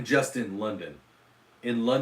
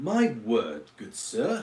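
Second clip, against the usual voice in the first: sing-song British accent blending two accents. Trying a British accent on request, the speaker attempts it: British accent mixing two accents. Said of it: "already mixing two accents".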